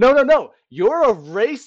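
very loud shout. Retelling a woman accusing the speaker in an argument: super loud accusation. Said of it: "Like super loud".

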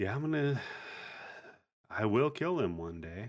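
calm, cold, even delivery. Showing how you'd say it alone in the shower where nobody hears: cold and calm. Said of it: "you just say it very coldly and calmly".

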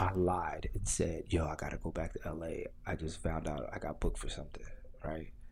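hushed, whispered voice.

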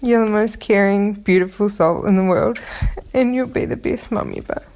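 speaking through tears. Speaking to Bridget before asking her to have babies, crying while speaking. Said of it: "because I'm crying".

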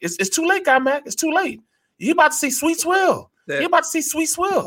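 very high-pitched, boastful, trash-talking voice. Retelling what a man said as he came by, in a high-voiced Swilling impression. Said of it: "He had a high voice too".

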